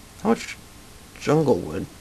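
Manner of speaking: soft voice breaking mid-word. Searching for a far-off jungle, the speaker asks a quick question, voice cracking. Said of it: "That was a nice voice crack".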